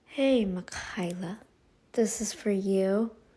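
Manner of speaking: sluggish tired voice. Addressing Makayla about a video strike: slow, tired-sounding voice. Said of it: "I sound kinda slow and I sound kind of whatever".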